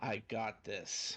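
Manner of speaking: voice dropped very deep and kept soft. Speaker in character as Silas during a game, Silas's very deep voice. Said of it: "Silas's voice drops really deep".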